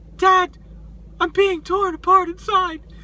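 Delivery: very high, small, wounded little voice. Retelling a movie scene, the speaker does Ren's little mock-hurt voice to his dad. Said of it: "it's his little, like, hurt voice".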